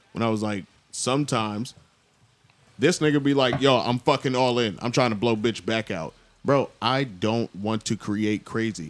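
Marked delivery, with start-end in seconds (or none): none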